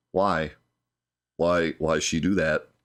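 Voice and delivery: utterly deadpan monotone, no emotion, no pitch lift. Retelling a game scene after a character's arm is smashed, as a monotone Shulk impression. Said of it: "in like the most monotone voice ever".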